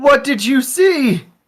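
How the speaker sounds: very high, drawn-out, calling-out yell. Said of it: "I'm gonna yell from the dock".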